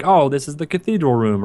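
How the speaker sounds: ordinary delivery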